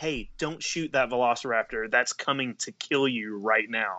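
usual speaking voice

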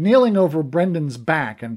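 plain

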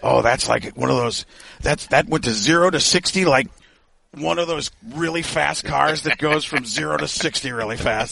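rambling put-on voice, words running on.

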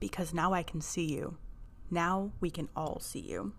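soft, eerie, creepy whisper.

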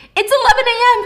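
very high, loud, frantic, panicked scream. Retelling a woman waking up late and panicking, imitating someone screaming. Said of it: "she starts screaming".

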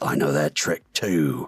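whispering under breath. Voicing a character lining up a shot: whispering under his breath. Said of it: "kinda whispering under his breath".

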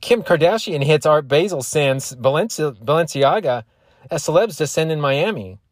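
over-the-top put-on announcer. Reading a celebrity headline aloud, in a TMZ announcer voice. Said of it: "Can I try to do the TMZ voice?".

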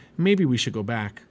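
plain reading voice

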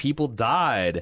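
stunned, disbelieving, incredulous and drawn-out. Retelling a character's reply from a show: imitating an incredulous tone. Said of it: "Allie incredulously is like".

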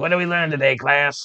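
nagging classroom teacher tone. Recapping what was learned today, the speaker mimics: imitating a nagging teacher. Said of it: "it sounds like a nagging teacher".

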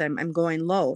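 ordinary talk

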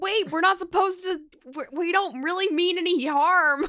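loud, high yell calling from far off. In a game, calling out to whoever is inside the house: yelling from far away. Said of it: "I'm just going to be yelling from like way far away".

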